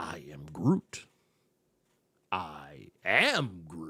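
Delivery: very deep, very slow voice, every word dragged. Describing an actor's voice acting in the booth, do a Groot voice. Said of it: "when he's doing like the the voice acting".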